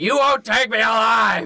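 put-on full-throated, high-pitched scream. Recounting being dragged out of a sit-in, screaming at them: retelling a scream. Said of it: "And I screamed at them".

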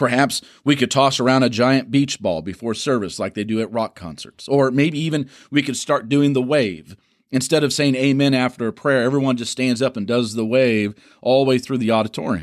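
ordinary delivery

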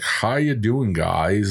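put-on slow American accent, each word carefully enunciated. Imitating a comedian putting on an American accent: Jim Jeffries doing an American accent. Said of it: "American accent".

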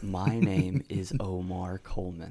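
imitated slow talking. Retelling a movie scene as the parole officer: imitating someone talking slowly. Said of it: "Why are you talking so slow?".

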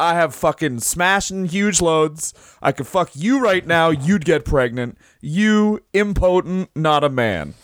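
put-on heated, half-shouted, mild ranting yell. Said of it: "standing up and screaming at him".

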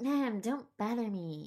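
put-on gentle high-school teen voice. Recalling their high school self, in their old high school voice. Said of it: "That was my high school voice".

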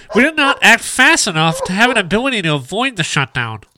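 nasal nerd voice. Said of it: "you're still working on the nerdy voice?".

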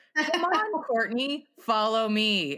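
normal talking voice

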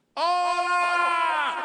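crowd-like shouting. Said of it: "The entire group shouted".

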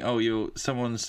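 ordinary delivery

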